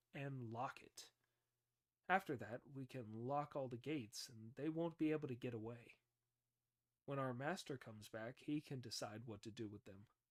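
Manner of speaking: plain reading voice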